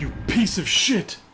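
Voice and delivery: high-pitched, loud, snarling character voice.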